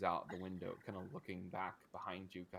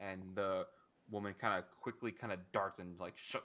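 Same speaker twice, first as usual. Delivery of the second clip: usual speaking voice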